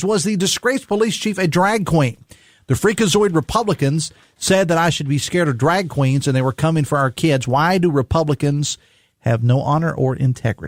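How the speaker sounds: ordinary delivery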